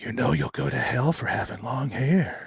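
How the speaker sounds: put-on hushed, eerie, creepy old woman's voice. Retelling what a religious relative told a little kid: imitating a creepy old woman. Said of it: "just this creepy old woman. And she goes".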